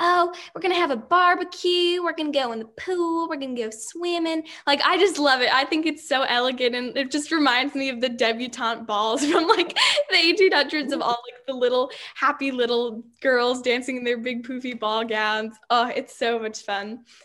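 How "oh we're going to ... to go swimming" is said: high-pitched, lilting Southern accent. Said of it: "I really like talking in a Southern accent".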